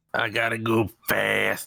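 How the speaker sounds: very slow, rough, creaky smoker's rasp, drawn out. Imitating how Sonic talks in the movie: Sonic voice like a lifelong smoker. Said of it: "Like he's been smoking cigarettes his entire life".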